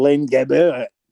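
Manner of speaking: fake, put-on French accent. Retelling how they reacted to the player's name, saying it in a French accent. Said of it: "Why are you saying with a French accent?".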